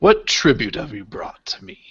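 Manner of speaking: stone-grinding grumbling voice. A creature answers adventurers asking if they're welcome in its home, stone-grinding grumble. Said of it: "almost like stone grinding on stone".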